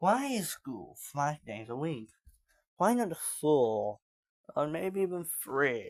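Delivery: slowed-down, deliberate text-to-speech AI narrator voice. Comparing themselves to a commentary video, the speaker imitates its ai voice; slowed-down ai voice. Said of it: "the A I voice just slows down saying".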